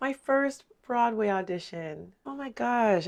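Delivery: emotional voice welling with tears. Recalling their first Broadway audition and getting emotional: tearing up. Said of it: "I'm tearing up".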